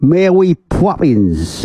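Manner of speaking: mock, high, slow, erratic bad Cockney accent. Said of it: "went something like".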